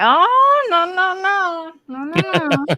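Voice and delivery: high, sarcastic mock disbelief. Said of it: "I'm like".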